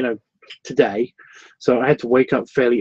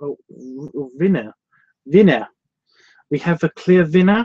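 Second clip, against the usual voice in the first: slight German accent, lightly done; 3 semitones higher than usual. Host announces that there is a clear winner, slight German accent. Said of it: "I went slightly German accenty".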